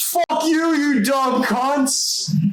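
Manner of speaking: mock, very high, screamed yell. Recounting what a passerby on the street screamed at them: imitating a stranger's scream. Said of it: "Somebody screamed out at us saying".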